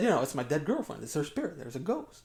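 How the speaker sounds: ordinary delivery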